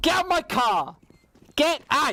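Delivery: put-on, very high, loud, slow, drawn-out shouting. Answering a co-caster who expected shouting: mock shouting. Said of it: "start shouting".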